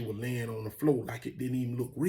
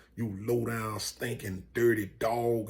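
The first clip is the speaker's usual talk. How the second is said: ordinary talk, nothing marked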